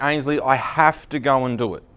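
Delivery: plain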